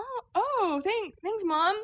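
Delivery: put-on very high, slow, stumbling, forced delivery. Retelling a husband's reaction to an odd gift: imitating someone playing it off. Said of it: "he tried to play it off like".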